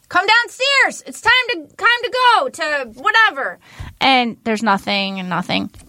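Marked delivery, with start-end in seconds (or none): 0.1-3.5 very high-pitched hollering yell. Retelling calling the kids downstairs: imitating yelling. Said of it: "And if I'm yelling, I'm like".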